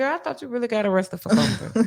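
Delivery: acted relaxed, chummy, casual off-the-clock voice. Retelling a woman's remark to the speaker, dropping the professional voice. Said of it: "she took off her professional voice".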